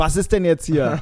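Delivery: acted, really fed-up, exasperated and annoyed outburst. Recounting putting her arm in the closing door and yelling at her: retelling an annoyed shout. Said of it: "schrei sie nur quasi so an wie".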